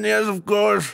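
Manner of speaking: put-on old-timey noble voice. Roleplaying a king in Sort the Court, in an olden nobleman voice. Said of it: "I just want an excuse to use my olden voice".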